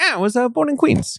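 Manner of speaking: high cartoon rat-style voice. Talking about Martin Scorsese's documentaries on his childhood, doing a Martin Scorsese impression. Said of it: "Interesting impression".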